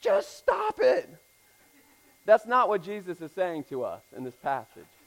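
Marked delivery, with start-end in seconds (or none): 0.0-1.1 mock very high, creaky, rough yelp. Retelling an old counseling clip: imitating Bob Newhart screaming. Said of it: "he screams out".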